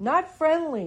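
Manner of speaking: high, loud, unfriendly yell. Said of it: "But I have started yelling".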